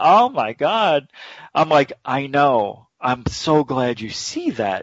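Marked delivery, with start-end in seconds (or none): 0.0-1.1 put-on Yiddish-tinged accent.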